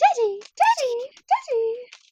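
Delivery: put-on very high, loud, simpering girl voice. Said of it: "that simpering little girl voice".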